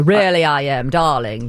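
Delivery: put-on slow, drawn-out old Hollywood transatlantic accent. Discussing old movies, the speaker mimics how their actors talked, in a transatlantic film accent. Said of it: "they talk in their transatlantic speakies".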